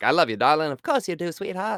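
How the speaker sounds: Mid-Atlantic stage accent. Imitating how people talk in old films: old-movie Mid-Atlantic accent. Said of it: "it's like news talk".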